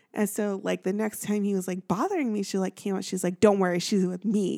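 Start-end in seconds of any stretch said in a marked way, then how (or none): 3.4-4.6 mock, super-aggressive put-on tone. Retelling how she stepped in when a guy bothered the speaker, mock super-aggressive. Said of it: "And she's like super aggressive".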